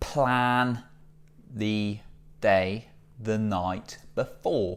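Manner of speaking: very slow, deliberate, stretched-out delivery. Sharing productivity tips in a video, giving tip number one, said very slowly. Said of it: "I don't know why I said that so slowly".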